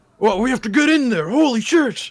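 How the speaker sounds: voice pitched very high. A player casting a message spell speaks as the guard, impression of the guard. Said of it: "I'm gonna try my best impression of the guard".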